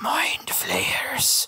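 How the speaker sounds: hissed whisper. Narrating a tabletop game, voicing the ship's captain, a hissing captain voice. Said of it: "the captain hisses".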